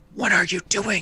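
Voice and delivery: hushed whisper. In a tabletop game, a player's character whispers to Matthias: whispering. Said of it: "I'm going to whisper to Matthias".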